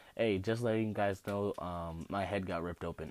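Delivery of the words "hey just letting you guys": ordinary delivery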